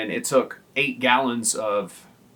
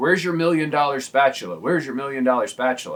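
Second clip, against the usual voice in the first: put-on, half-shouted, repeated mild yell; 3 semitones higher than usual. Speaker retells his manager yelling at a cook during training, retelling a manager's screaming. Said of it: "he kept screaming like".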